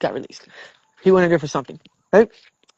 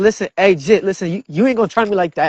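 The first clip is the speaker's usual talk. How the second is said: ordinary delivery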